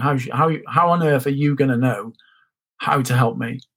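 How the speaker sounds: ordinary delivery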